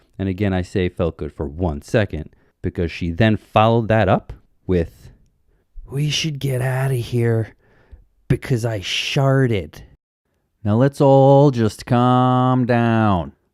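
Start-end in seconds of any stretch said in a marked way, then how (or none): 5.9-9.8 put-on loud drunk girl whisper, higher. Retelling what a drunk girl said into his ear: imitating Becky's loud drunk whisper. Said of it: "drunk whispers into my ear".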